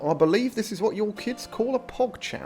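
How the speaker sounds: terrible put-on generic English accent, pitched high. Reading a line aloud in a terrible generic british accent. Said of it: "Read this in the most generic British accent you can. / That's a terrible English accent".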